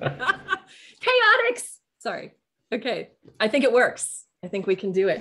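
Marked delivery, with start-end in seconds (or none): 0.0-1.6 shrill, very high, loud yell. Testing a new group name by yelling it aloud: loud yell. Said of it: "Sorry, that was really loud".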